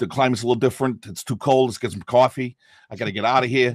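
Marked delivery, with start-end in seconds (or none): 1.1-3.7 stronger, harder New York accent. Showing how the American accent sounds in New York: harder New York accent. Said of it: "in New York, it's a little more hard".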